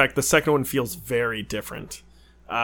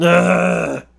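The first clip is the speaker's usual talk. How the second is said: put-on movie-hero groan, higher and louder. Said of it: "That was my Charlton Heston impression".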